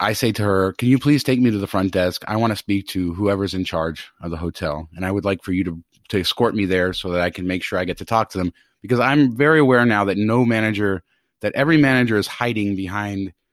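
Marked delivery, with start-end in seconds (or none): none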